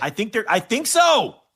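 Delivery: shouting. Answering whether a show is going on air tonight, yelling. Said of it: "I don't know why I'm yelling".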